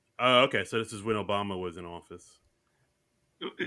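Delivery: disappointed tone. Co-host reacting to a detail about when a film episode aired; disappointed tone. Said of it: "Why do you sound so disappointed?".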